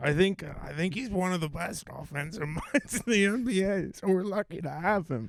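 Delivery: put-on raspy, slightly high Midwestern accent. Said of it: "That's my Nick Nurse impression".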